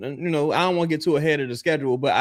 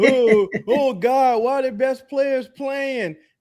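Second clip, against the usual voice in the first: mock whining, complaining, higher; 9 semitones higher than usual. Mocking fans who complain when injured players return: imitating whining fans. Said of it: "Stop all that crying. Act like it's".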